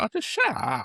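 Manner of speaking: put-on dismissive brush-off voice, high, tossed off.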